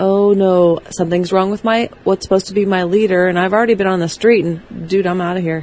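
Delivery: ordinary delivery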